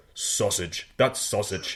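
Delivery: put-on heavy, thick Nigerian accent. Retelling what a college professor from Nigeria would say: imitating a professor's thick Nigerian accent. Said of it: "did this thick Nigerian accent".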